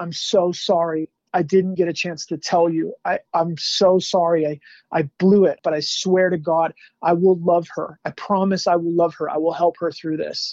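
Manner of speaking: mock sobbing. Recalling kneeling as an 18-year-old by a dead body, retelling own sobbing.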